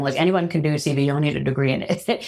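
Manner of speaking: plain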